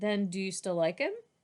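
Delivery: plain reading voice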